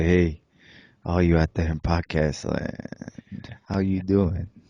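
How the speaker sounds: low, sultry, seductive put-on host voice. Joking about doing a sexy podcast, greeting the listeners: sexy voice. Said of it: "Get sexy voice".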